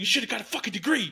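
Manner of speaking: put-on furious ranting, pitched very high. Retelling how a man snapped at a woman: imitating an angry outburst. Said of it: "And then he stormed out".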